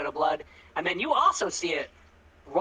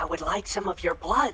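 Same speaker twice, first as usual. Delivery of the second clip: close whisper right into the ear. Voicing a game character millimeters from someone's ear, whispering right in the ear. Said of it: "whispers like he gets like right up on".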